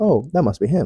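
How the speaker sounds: normal talking voice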